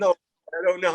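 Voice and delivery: talking while laughing helplessly, high pitch. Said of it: "and [name]'s laughing".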